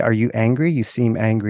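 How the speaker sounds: plain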